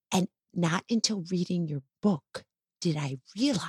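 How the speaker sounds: secretive, soft, embarrassed half-whisper, kept hushed. Admitting something embarrassing to the author of a book she read, half-whispering. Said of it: "She's whispering now".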